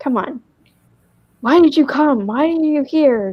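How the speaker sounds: put-on, high-pitched, demanding yell. Retelling an argument at a party, imitating a yell. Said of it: "Yelling at her".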